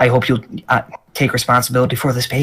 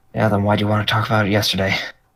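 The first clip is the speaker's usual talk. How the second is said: quiet, low muttering under the breath; 3 semitones lower, 4 dB quieter than usual. Voicing a character answering another quietly: mumbling under her breath. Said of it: "just kinda under her breath mumblings".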